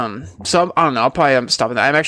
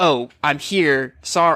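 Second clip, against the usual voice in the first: very slow, deliberate talking-gadget voice. Retelling how the phone assistant butts in: imitating Siri. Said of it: "it's like".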